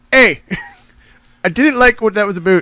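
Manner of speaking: bad put-on Canadian accent, angry, very loud, high. Host imagining an angry canadian listener writing in: terrible mock-angry canadian accent. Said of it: "angry Canadian".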